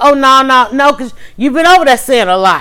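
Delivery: ordinary talk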